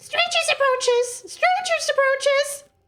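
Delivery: piercing, very high, shrill doll voice. Narrating a scene, the speaker voices a doll on a pedestal outside, shrill doll voice. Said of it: "there is a shrill um, voice coming from outside".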